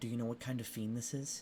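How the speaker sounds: half-whispered voice. Voicing the Inquisitor who asks a player about a fiend: half-whispering as the Inquisitor. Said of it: "the Inquisitor whispers to you".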